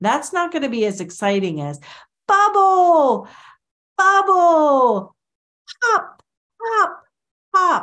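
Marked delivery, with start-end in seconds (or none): 2.3-7.8 over-the-top, very high, very slow animated voice. A speaker demonstrates how to sound more exciting: exaggerated animated tone. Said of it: "I'm exaggerating. I have a higher tone. I'm more animated".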